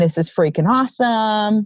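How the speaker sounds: ordinary delivery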